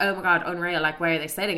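normal talking voice

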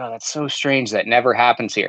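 put-on sarcastic voice. Retelling what a waiter said afterward at a restaurant, mimicking a sarcastic remark. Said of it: "Of course he was being sarcastic".

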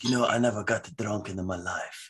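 put-on strong Italian accent. Quoting his dad during a talk with Tom, in a heavy Italian accent. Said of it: "in his heavy Italian accent".

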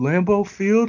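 frog puppet character voice. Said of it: "He had a Kermit the Frog ass motherfucker voice".

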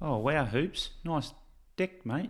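put-on New Zealand accent. In a sponsor bit on the show, greeting Hoops: New Zealand accent. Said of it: "I was practicing my New Zealand accent".

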